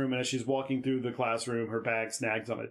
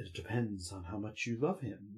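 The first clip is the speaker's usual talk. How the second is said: dark, foreboding, hushed, ominous voice; 3 semitones lower, 7 dB quieter than usual. Retelling Birdwell's answer to Emily's question, mock-ominous, quoting Birdwell. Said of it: "very ominously".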